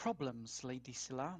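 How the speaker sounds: very quiet, hushed, close voice. Sneaking close to a crouching companion, the character asks very quietly. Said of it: "he very quietly asks".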